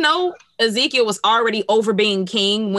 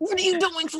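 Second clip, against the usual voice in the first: high half-whisper with lips hardly moving, mouth nearly shut; 10 semitones higher, 5 dB quieter than usual. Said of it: "and then he was trying to whisper".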